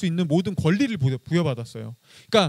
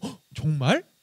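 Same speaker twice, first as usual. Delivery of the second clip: delighted, genuinely amazed, surprised gasp; 2 semitones lower, 3 dB quieter than usual. Testing whether the snake's first question to Eve sounds positive: pleasantly surprised. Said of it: "정말 긍정적인 느낌으로".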